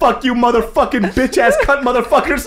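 screaming. Retelling own frightened climb and cursing at helpers: retelling own yelling. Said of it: "He's just yelling".

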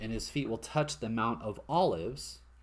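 ordinary delivery

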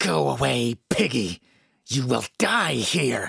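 hate-filled, seething, rasping voice. A glaring woman confronts the narrator: seething. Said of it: "she seethed".

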